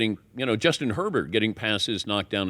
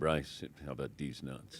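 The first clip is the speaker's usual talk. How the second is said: mock deadpan mutter, very low and soft; 9 semitones lower, 14 dB quieter than usual. Answering how the coach says it, imitating the coach's deadpan delivery. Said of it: "How's he say it?".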